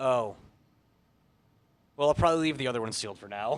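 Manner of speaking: deflated, resigned, letdown tone, excitement draining out. Retelling the end of a pack opening: imitating someone dying inside. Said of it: "just slowly dying inside".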